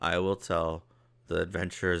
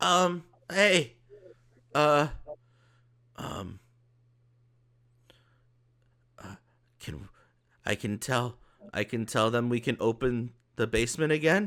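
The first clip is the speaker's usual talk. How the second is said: high-pitched goblinoid voice; 6 semitones higher, 4 dB louder than usual. Voicing Nolan asking to open the basement: Nolan voice. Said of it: "It's Nolan".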